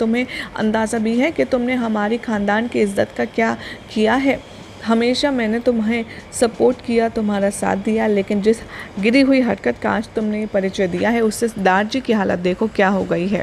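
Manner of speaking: ordinary delivery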